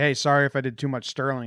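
plain

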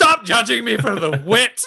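put-on, high-pitched yell, voice pushed way up. Voicing a wounded fighter who yells at a disapproving companion: yelling in character. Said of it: "just yells".

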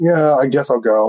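put-on grudging, reluctant teenager voice. Retelling own reply when dad asked to come along: imitating reluctant teenage self. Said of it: "being, like, a teenage boy".

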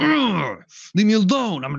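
acted, swooping yell. Retelling a cartoon episode's scene: imitating Optimus Prime yelling. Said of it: "He just yells out".

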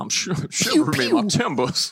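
put-on, loose country-style accent. Joking with the others on a podcast in a country-ish accent. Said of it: "You're going through every type of country-ish accent".

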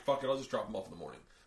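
plain

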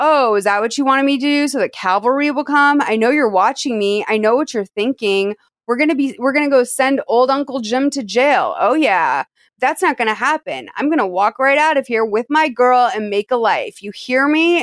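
play-acted, jeering, derisive, mocking, taunting tone. Retelling a film scene where a man taunts a girl: imitating a mocking tone. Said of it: "mocking her at this point. He's like".

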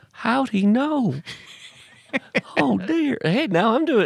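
put-on Southern accent, farmer voice. Imagining Jimmy Carter's reaction to the joke right now, Jimmy Carter impression. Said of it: "who can't do a Southern accent".

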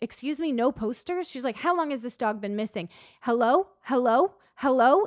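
acted aggressive, demanding woman's voice. Retelling how a woman reacted about the missing dog, imitating an aggressive woman. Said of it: "she's like aggressive".

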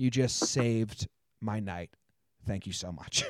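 acted soft, pointed, passive-aggressive thanks. Retelling turning to the people seated behind: mock passive-aggressive thanks. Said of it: "passive aggressive".

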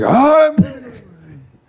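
really breathy, very high and slow. Imitating how another speaker said a line: imitating a breathy voice. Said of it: "really breathy for some reason".

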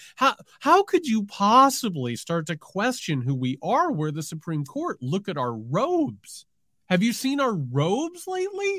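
aghast, breathless, high-pitched, gasping indignation. Impersonating a Supreme Court justice being questioned, with mock-gasping indignation. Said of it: "he's gasping".

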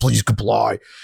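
fake threatening robot voice. Describing a robot they loved as a kid, an intimidating ED-209 impression. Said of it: "it's got that very intimidating voice".

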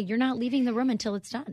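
ordinary delivery

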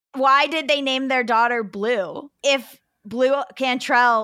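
ordinary delivery

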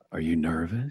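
put-on deep voice, dropped far low, hushed. Speaker retells walking by a man watching highlights and asking him, in a deep voice. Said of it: "I just said it in that deep voice where I go".

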